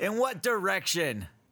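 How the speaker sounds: shouting. Asking in character where a noise came from: yelling. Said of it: "You don't have to yell at me".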